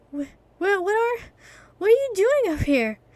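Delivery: out-of-breath, puffing call. Narrator reads a boy who jogged up a mountain, out of breath, panting. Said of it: "hands on his knees as he panted".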